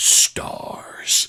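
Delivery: breathy, whispered monster voice. Showing how the monster chased Jill Valentine: Nemesis voice. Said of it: "Nemesis would chase after Jill Valentine, like".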